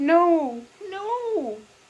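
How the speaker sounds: pleading, rising pitch. Narrating a story, reading a trembling man's plea: pleading, rising higher and higher. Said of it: "Gozan pleaded in a higher and higher voice".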